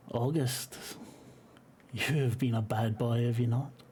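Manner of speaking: raw, rasping creature voice like skin rasping. Narrating a scene, voicing the creature speaking to a character: rasping, raw creature voice. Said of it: "it sounds like skin rasping, raw".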